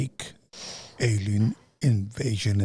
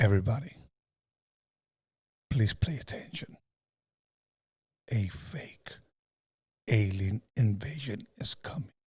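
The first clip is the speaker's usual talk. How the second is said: dramatic, theatrical announcer-style delivery; 5 dB quieter than usual. Asked to reenact an announcement line, the speaker says it: dramatic announcement. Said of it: "Do I have to say it like dramatic?".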